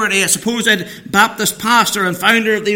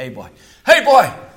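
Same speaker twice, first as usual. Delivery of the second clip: mock calling out, low, mild and held back; 6 semitones lower than usual. Telling a story, the speaker recreates calling out the northern irish way, retelling a shout. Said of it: "you shout".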